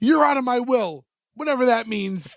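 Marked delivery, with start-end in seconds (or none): 0.0-1.0 acted embarrassed yell, much higher. Recapping a show scene where a son yells at his mom, retelling an embarrassed yell. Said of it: "gets embarrassed and looks at his mom and just yells".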